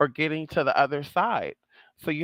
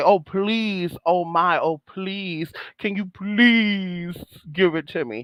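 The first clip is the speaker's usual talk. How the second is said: put-on begging, pleading tone; 2 semitones higher than usual. Showing how not to ask in prayer: mock begging and pleading. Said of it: "Or are you begging and pleading?".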